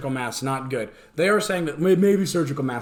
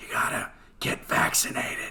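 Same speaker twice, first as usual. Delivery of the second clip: quieter put-on creepy old man's whisper. Imitating Joe Biden reading the prompter: imitating Joe Biden whispering creepily. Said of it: "he whispers in that creepy".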